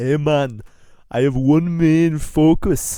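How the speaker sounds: failed, very loud Jamaican accent. Playing a game-show contestant, admitting the attempt fails: bad put-on Jamaican accent. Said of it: "I can't do the Jamaican".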